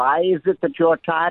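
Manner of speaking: put-on German accent. Retelling what a law professor said to a student: German accent. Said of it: "he had a German accent, by the way".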